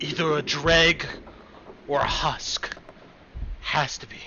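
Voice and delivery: hushed whisper under the breath. Voicing a character answering a player's question in a game, whispering. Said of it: "He whispers to you".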